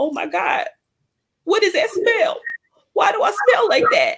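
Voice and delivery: put-on high sobbing through the words. Retelling being on the toilet before going out: imitating own past crying. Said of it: "on the toilet crying, like".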